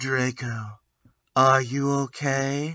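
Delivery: quiet, slow goth-style delivery. The narrator redoes a question to Draco: gothic voice. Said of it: "I asked in a gothic voice".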